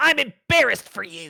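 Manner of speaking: very loud, shrill, screeching harpy voice. Voicing a harpy that turns straight toward the listener: screeching harpy voice. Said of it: "it screeches".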